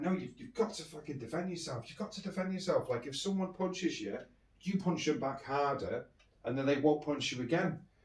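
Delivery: hushed, angry, insistent scolding. Retelling how she reacted to the speaker not punching back: imitating an angry woman. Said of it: "she got really angry and she's like".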